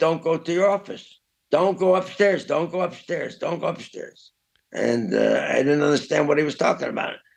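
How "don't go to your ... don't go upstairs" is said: urgent, repeated screaming. Retelling how a friend ran over warning him: imitating someone screaming.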